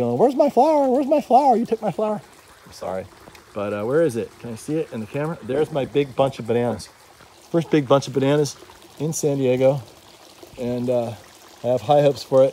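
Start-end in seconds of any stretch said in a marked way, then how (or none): 0.2-2.2 very high, panicked little bee voice. Voicing upset bees who lost their flower: pretend freaking-out bee voice. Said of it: "They're going around freaking out".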